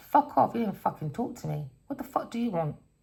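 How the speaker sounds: put-on pissed-off tone. Acting out what she'd say when pissed off with him: imitating someone pissed off. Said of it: "She could be pissed off with him".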